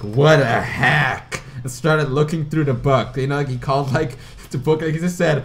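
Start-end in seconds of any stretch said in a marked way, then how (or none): 0.0-1.4 really loud, proclaiming exclamation. Retelling what another person said on taking a book, really loud voice. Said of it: "said in a really loud voice".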